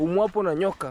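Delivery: ordinary delivery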